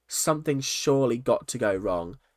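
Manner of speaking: usual speaking voice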